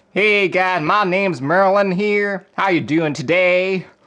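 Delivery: put-on Southern American accent, pitched high. Put on the spot to do a southern accent, try a greeting in southern accent. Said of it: "Please give us a southern accent".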